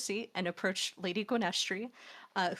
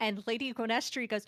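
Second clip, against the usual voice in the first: normal talking voice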